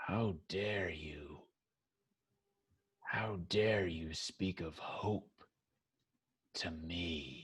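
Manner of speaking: rough, rasping, very deep and hushed voice. Storyteller voicing a scarred woman confronting the bound listener: very raspy, rough voice. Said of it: "her voice is very raspy, very rough".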